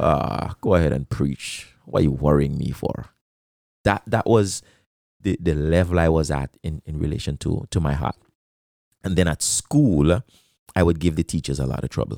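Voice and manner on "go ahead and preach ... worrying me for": put-on muttering under breath. Recalling answering his preaching dad, acting out muttering under breath. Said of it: "I'll be like under my breath".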